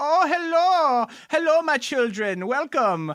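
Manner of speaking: put-on Swedish accent. Retelling a presenter's stage entrance: imitating a Swedish presenter. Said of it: "he's, like, Swedish".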